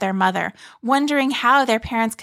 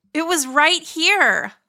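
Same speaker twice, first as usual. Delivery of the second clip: insistent, disbelieving, high, drawn-out, protesting; 6 semitones higher than usual. Narrator reads Harlie after they find no trampoline in the backyard, protesting. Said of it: "Harlie protested".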